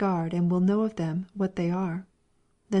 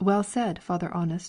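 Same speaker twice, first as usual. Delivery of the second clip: ordinary delivery, nothing marked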